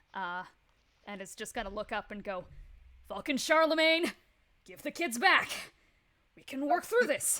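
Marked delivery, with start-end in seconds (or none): 3.1-7.5 very loud, high-pitched, in-character shout. Voicing Mako calling up to the ship: yelling as Mako. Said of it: "yells this out".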